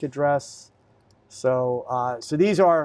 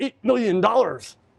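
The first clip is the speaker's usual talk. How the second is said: higher, silly mock dumb voice. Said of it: "don't be stupid, say".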